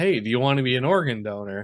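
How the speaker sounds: normal talking voice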